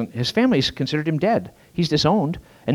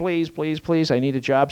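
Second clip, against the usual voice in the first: earnest, imploring, begging, pleading voice. Telling a story, the speaker acts out a man, imitating begging. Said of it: "He's begging".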